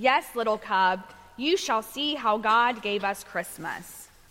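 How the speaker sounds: plain reading voice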